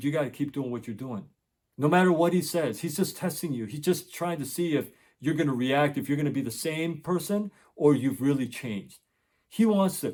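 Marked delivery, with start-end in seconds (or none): none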